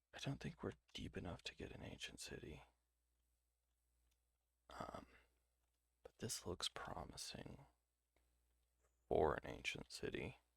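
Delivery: whispered, breathy and very quiet. Speaker exploring a promising spot while recording content, whispering. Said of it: "I I really need to stop whispering".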